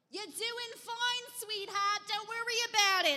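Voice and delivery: very high, yelled, reassuring tone. Speaker retells what he yelled back when asked to help: retelling a yell. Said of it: "And he yells back".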